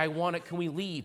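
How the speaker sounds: put-on childish, begging voice like kids pleading. Retelling how two young kids begged their dad to leave a movie: imitating kids begging. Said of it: "begging the dad".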